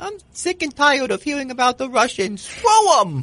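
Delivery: put-on very high, rousing voice of a four-year-old. Retelling a viral video of a child giving a speech, impersonating a 4-year-old. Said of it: "you impersonating a 4-year-old".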